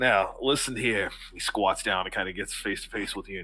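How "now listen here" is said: in-character voice, commanding, in charge. Voicing the guy who instructed the other, standing over the player: voicing the guy instructing the other. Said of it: "he goes".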